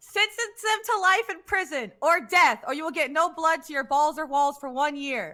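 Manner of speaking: very loud, high-pitched yelling. Reading out a written statement that is in all caps, yelling it. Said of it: "so I'm going to yell it".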